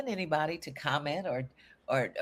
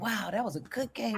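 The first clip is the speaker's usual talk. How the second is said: put-on excited boy voice, higher pitch; 6 semitones higher than usual. Retelling a seven-year-old boy's words after a card game: imitating an excited child. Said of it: "he was so excited".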